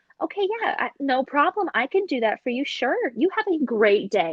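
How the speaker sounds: polite customer service voice. Retelling how they talk to customers and a manager: customer service voice. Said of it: "my customer service voice".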